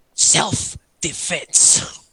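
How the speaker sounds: growlish, half-crazed voice. Voicing Keel in his crazy state during a game, Keel's growlish voice. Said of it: "growlish voice".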